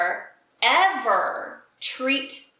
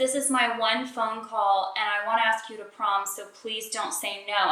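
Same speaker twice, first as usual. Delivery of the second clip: normal talking voice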